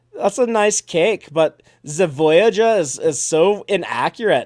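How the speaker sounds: put-on slow, loud, drawn-out German accent. Speaker recounting what a man beside him said about a cake, imitating a german accent. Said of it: "this guy in a German accent standing next to me is like".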